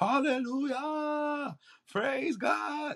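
very high, shrill shouting in a church style. Retelling handing out food when a man started shouting: imitating a man shouting. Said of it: "this man just starts shouting".

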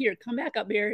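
ordinary talk

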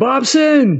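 very high, shrill character yell. Voicing a character running toward a farmhouse, calling someone: in-character yelling. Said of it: "he would start yelling".

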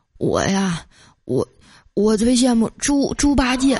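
mock slurring of words. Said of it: "口齿不清地说".

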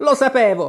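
sudden, high, shouted outburst. A character, seeing his rattle is broken, stamps his feet, shouting. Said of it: "gridò Twideldum".

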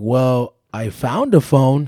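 put-on loud, very slow, drawn-out sarcastic drawl. Retelling a phone call with the man who had his phone, imitating a sarcastic reply. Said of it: "Kind of like sarcastic".

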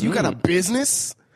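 yelling aggressively. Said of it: "Why so aggressive?".

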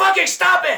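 very high, very loud yell at the top of lungs. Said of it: "yelled this at the top of my lungs".

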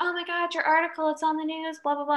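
play-acted, high-pitched screamed blurt. Retelling a book scene of a character's article news: imitating someone screaming. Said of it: "Lexa literally screaming at her".

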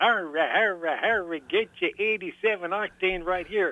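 lively fairground pitchman carnival barker call. Warning listeners they'll sound like a carnival barker for a moment: carnival hoopla barker voice. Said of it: "I sound like a carnival hoopla barker".

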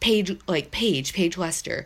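low mumbled mutter, half to himself, under breath. Retelling how a head coach grabbed his phone: imitating someone muttering under breath. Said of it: "muttered under his breath".

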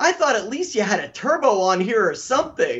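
acted, high, angry, fed-up, let-down griping. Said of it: "he was so mad".

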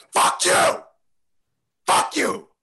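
shrill, very high, ragged, rough, drawn-out yelling. Ordering someone back to their room after giving them extra minutes, yelling. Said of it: "I don't know why you were yelling".

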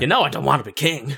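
put-on cowboy voice. Imitating Alistair confronting Stevan: Alistair as a cowboy. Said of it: "You make it sound like he's a cowboy".

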